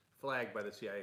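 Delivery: ordinary talk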